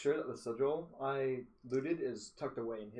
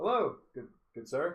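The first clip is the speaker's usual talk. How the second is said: put-on older manner, slightly older, higher pitch; 3 semitones higher, 4 dB louder than usual. Greeting someone in character after clearing his throat, acting a little older. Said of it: "try to act like a little older than I am".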